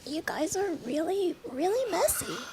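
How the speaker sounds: put-on teeny, tiny high voice, very soft and quiet. Recalling how they started performing after a few drinks, in a tiny voice. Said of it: "and like a tiny voice".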